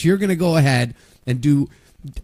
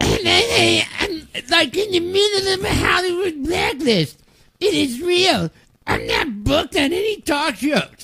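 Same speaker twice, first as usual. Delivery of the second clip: high, slow, drawn-out put-on woman's voice; 13 semitones higher than usual. Retelling what a woman claims, the speaker tries imitating her voice. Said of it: "let me try and do her voice".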